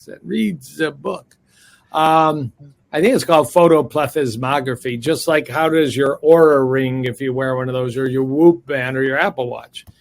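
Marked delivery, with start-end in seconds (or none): 0.2-1.4 put-on German accent. Quote what a medical school professor of yours used to say, in a German accent. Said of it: "used to say that with a German accent".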